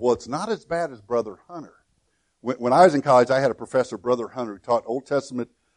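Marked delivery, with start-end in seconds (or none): 0.0-1.7 soft, hushed half-whisper under the breath. Retelling a remark made to a professor during class: retelling a half-whisper. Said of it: "And I whispered to Griff".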